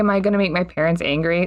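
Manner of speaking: ordinary talk, nothing marked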